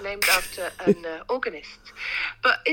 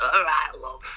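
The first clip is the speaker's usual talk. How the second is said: put-on Manchester accent, lower pitch; 6 semitones lower than usual. A guest greets the host, showing the voice she'd answer calls with: put-on Manchester voice. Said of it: "answering your call with this kind of voice".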